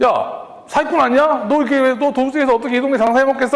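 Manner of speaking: high, furious, angry outburst. Retelling how a customer shouted at the pharmacy: imitating an angry customer. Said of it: "하면서 엄청 화를 내시는 거예요".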